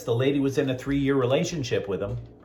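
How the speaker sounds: usual speaking voice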